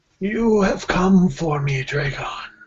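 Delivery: sorrowful ghost voice. Voicing a ghost mother who looks sadly at her child: sad ghost mother voice. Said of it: "her ghostly visage looks kind of sadly at you, and she says".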